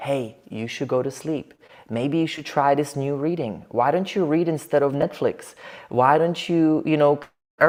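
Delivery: hushed, soft, quiet inner-voice tone. Showing how the quiet inner voice sounds: saying it quietly. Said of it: "I'm saying it quietly".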